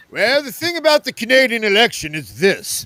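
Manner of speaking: bad put-on announcer voice. Asked to give an update, the speaker starts it in a horrible radio voice. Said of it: "horrible at the radio voice".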